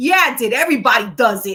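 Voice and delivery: thick, mocking Rhode Island accent. Speaker quotes a man caught using the women's bathroom, stupid Rhode Island accent. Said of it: "with the real stupid Rhode Island accent".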